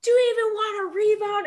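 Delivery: very high, loud screaming. Retelling what a loud coach yells in timeouts: imitating a coach screaming. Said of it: "he's just screaming".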